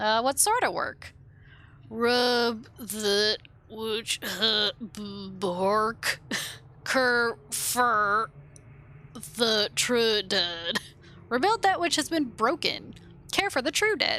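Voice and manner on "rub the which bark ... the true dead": slow, drawn-out zombie drawl, sounds stretched long. Speaker performs lines, then asks the others if they like it; zombie voice. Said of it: "Do you guys like my zombie voice?".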